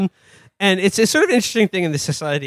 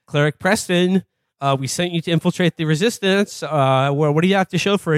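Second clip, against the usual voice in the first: ordinary talk, nothing marked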